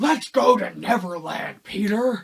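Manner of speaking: very loud, slow, high-pitched belting. Mocking an actor's performance as Captain Hook: imitating Garrett Hedlund's Captain Hook. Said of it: "he talks like this".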